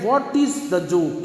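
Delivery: ordinary delivery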